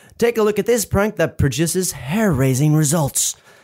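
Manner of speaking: ordinary delivery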